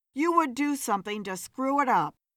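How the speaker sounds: plain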